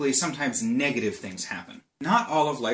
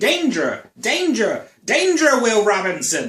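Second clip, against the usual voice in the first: screamed loud, slow and swooping; 8 semitones higher, 8 dB louder than usual. Comparing the nervous system to the Lost in Space robot: screaming like the Lost in Space robot. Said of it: "is kind of always screaming".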